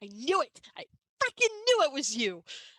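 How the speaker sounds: high, loud, gleeful crowing.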